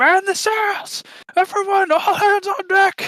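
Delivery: very high, drawn-out, top-of-the-lungs shout. Voicing a ship's helmsman ordering the party on deck: yelling at the top of his lungs. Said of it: "He's yelling at the top of his lungs".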